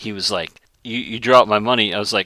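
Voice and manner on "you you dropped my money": irate, pissed-off, griping complaining tone. Retelling a customer's complaint about a dropped dime: imitating a pissed-off customer. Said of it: "he got so pissed over that dime".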